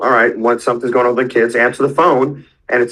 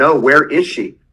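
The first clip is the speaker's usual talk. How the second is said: put-on raised voice; 3 semitones higher than usual. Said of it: "I had to raise my voice".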